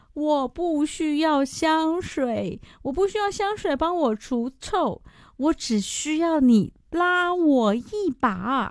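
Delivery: high, slow, drawn-out pleading cry.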